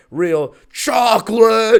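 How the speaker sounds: loud, high-pitched cartoon fish character voice. Host reading a protein bar ad slips into a SpongeBob fish impression. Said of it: "my best impression of that SpongeBob fish".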